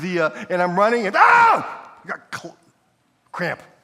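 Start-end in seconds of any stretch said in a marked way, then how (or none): 1.1-3.6 very high, very slow, loud, drawn-out pained cry. Retelling getting a cramp mid-run, acting out a pained cry. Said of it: "That's exactly how you respond".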